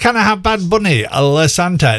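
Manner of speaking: ordinary talk, nothing marked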